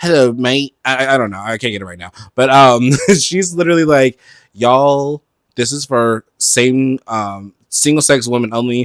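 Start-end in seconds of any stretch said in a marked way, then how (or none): 0.0-0.8 poorly attempted put-on London accent. Retelling what a woman said, first trying an attempted London accent. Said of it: "what's my London accent?".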